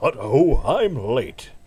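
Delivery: smooth British spy voice. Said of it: "No, that's terrible".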